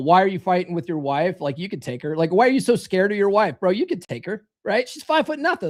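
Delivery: put-on playful, joking, teasing tone. Retelling own past remarks to the audience: imitating own joking tone. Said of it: "sort of jokingly say".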